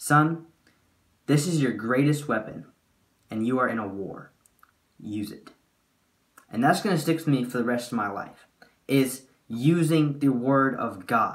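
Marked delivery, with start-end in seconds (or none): 0.0-5.5 dead serious, solemn and earnest voice. Retelling how the dad handed over a Bible: imitating dad's dead serious words. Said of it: "the way my dad said it, he meant it in every single way".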